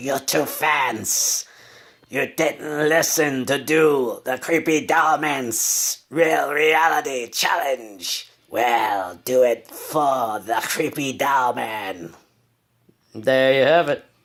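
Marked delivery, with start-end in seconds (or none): 0.0-12.1 slow, drawling, put-on cartoon villain voice. Performing for the fans, Cobra Commander voice. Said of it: "That was the Creepy Dollman doing the Cobra Commander's nineteen eighties cartoon voice".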